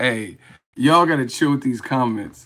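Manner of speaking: ordinary delivery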